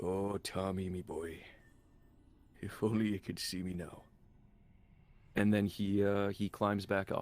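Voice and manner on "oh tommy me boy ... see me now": soft, relieved, at-peace mutter. A man sits beside a whale, looking back at the sky, muttering. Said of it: "and he just mutters".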